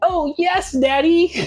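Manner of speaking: squeaky, very high-pitched put-on character voice. Quoting a meme clip from a children's show: Caillou voice. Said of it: "a clip of Caillou being like".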